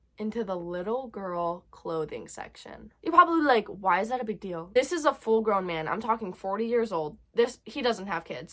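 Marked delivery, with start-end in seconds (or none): none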